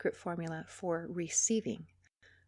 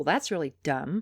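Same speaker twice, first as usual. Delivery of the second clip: scornful, dismissive, insulting tone; 4 semitones lower, 3 dB louder than usual. Showing how an insulting reply to a partner sounds: acting out an insulting reply. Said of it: "reply by saying something insulting like".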